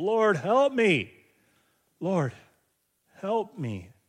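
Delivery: slow, desperate voice. Speaker retelling a woman's plea to Jesus: acting out a desperate plea. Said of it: "She's desperate".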